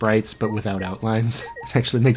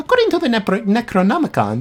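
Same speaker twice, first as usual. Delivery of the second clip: put-on female character voice; 12 semitones higher, 5 dB louder than usual. Reading a game character's line aloud: Angie voice. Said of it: "really hard to say in her, like, voice".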